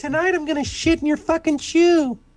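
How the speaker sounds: very high-pitched little dog voice. Voicing a puppy in a picture who threatens the viewer: voicing a puppy. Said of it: "he just looks at you and says".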